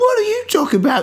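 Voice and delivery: animated woman's voice.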